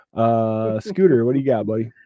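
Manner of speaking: normal talking voice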